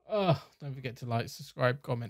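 soft, sad, pained, downcast tone. Streamer ending the video and signing off: sad. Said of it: "You can hear the pain in my voice".

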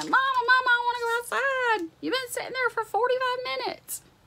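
very high, begging, pleading dog voice. Voicing the Yorkie begging to go outside: voicing a begging dog. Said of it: "She's begging me. She's like".

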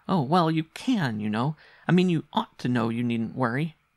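firm, insistent, pressing delivery. A boy presses his point again to his mother, insistent. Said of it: "he insisted".

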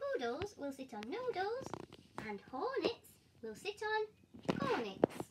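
plain reading voice

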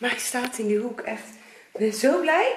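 breathless, winded talk, gasping between words. Speaker has just got a heavy cabinet into the corner, out of breath. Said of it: "Zo helemaal buiten adem".

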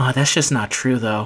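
muttering under breath. Retelling an unreleased video's intro: imitating muttering under breath. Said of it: "under my breath".

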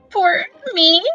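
squeaky voice. Anastasia asks the tall gardener, squeaking. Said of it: "Anastasia squeaked".

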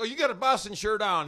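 put-on Southern accent. Retelling how a bar patron asked about a boston shirt, imitating a southern accent. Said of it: "He had a Southern accent".

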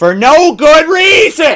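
slow, loud, drawn-out, swooping rising shout. Shouting a lesson at the boy, in character: shouting at the boy. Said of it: "I just shout that".

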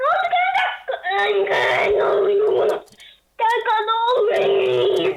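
panicked shout with crying.

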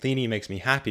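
ordinary talk

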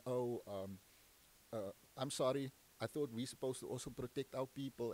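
plain

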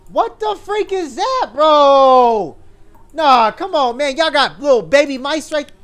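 high, loud, freaked-out yelling.

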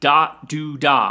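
dot do da, slow, loud, in swing rhythm.

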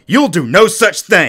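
very loud, annoyed outburst. Narrator reads the mother's reply, irritated. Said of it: "She was irritated".

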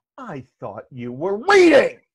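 play-acted accusing tone, very loud and swooping. Recalling a father walking in on them, retelling an accusing remark. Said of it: "As if it's an accusation".

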